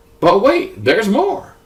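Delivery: very high, hyped tv-pitchman infomercial voice. Explaining packets nested inside packets, in an infomercial announcer voice. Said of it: "said in a infomercial tone of voice".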